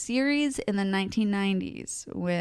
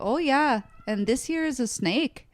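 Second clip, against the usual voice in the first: put-on high, slow, stretched-out Minnesota accent; 6 semitones higher than usual. Describing how a man's wife talked, imitating a minnesota accent. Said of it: "but she talked like it".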